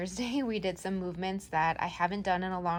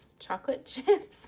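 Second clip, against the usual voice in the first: voice cracking, breaking high on chocolate chips; 6 semitones higher, 3 dB louder than usual. Talking through a snack, repeating a word as the voice cracks. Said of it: "Part of my voice crack".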